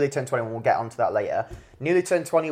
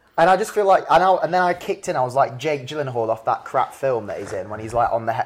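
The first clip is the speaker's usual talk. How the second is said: plain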